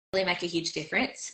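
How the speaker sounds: ordinary delivery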